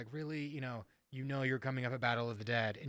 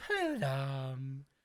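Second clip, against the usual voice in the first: put-on swooping, sing-song drunk voice with words stretched out. Retelling a drunk car ride, repeating own past words: imitating a drunk Mad Hatter voice. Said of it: "talking like the Mad Hatter".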